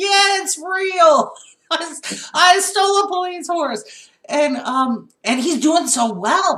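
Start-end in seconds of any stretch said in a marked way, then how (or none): 0.0-4.1 high, loud, overjoyed whoop. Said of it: "just the joy in his voice go".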